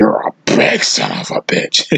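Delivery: terrible, rough, raspy wrestling-boss voice, surprised. Retelling what the wrestling boss said about his physique: terrible Vince impression. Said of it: "Terrible impression".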